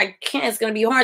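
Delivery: ordinary talk, nothing marked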